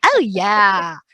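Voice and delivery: put-on drawn-out valley-girl voice. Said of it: "I could do that really good".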